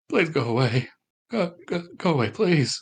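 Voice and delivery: faint, distant, frightened and panicky pleading. Voicing a hidden figure heard from a corner: faint panicking voice. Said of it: "a very faint panicking sound".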